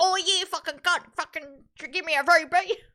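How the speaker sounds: put-on loud, very high, broad Australian accent. Quoting how a man talked by day nine: broad australian accent. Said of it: "by day 9 he's like".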